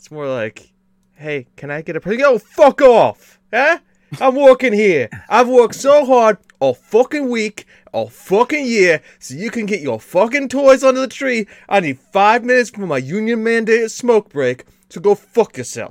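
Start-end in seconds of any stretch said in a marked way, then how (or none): 1.1-15.9 shrill, very loud, high put-on Brooklyn accent. On a christmas show, a guest acts out being an elf: brooklyn elf voice. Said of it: "kind of the Brooklyn elf".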